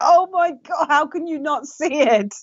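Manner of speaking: very high, shrill, exasperated scream. Describing people outside the bubble reacting, imitating people screaming. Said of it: "screaming, going".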